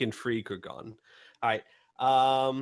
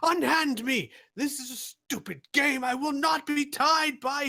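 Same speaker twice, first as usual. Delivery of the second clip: very high, all-out shout at top of lungs; 13 semitones higher than usual. Voicing a man with a cane being grabbed: shouting at the top of lungs. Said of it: "he is shouting at the top of his lungs".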